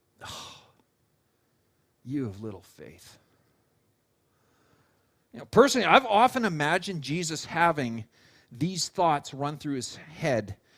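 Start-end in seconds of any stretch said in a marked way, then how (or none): 0.2-3.2 mock breathy, hushed, disappointed whisper. Acting out Jesus rebuking Peter for sinking: imitating a disappointed tone. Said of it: "hear the disappointing tone in his voice".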